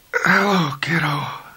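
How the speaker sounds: voice cracking and breaking, slightly high. A sweating, injured man on a bench greets the man bending over him: cracked voice. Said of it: "he said in a cracked voice".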